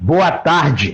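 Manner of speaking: mock hint of a thundering voice, mild. Retelling an early Sunday phone call that woke him, in Exaltino's thunderous voice. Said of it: "com aquela voz dele de trovão".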